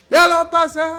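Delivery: shouting. Reacting excitedly during a group chat, yelling. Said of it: "Perdón por gritar".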